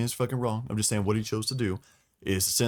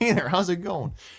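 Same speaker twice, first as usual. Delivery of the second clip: cheery, high-pitched cartoon critter voice; 9 semitones higher than usual. Picturing Zinch walking up to greet someone, as a cheery cartoon beaver. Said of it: "I'm imagining that's how Zinch is appearing".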